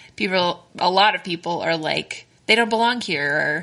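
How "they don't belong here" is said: ordinary delivery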